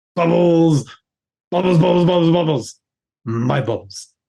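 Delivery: cartoon little fish character voice. Asked for his best impression, the speaker does the fish, fish impression. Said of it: "my best impression".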